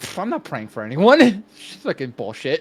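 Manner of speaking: contemptuous scoffing. Player's character turns away from the Father, scoffing to oneself. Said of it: "I'm scoffing to myself".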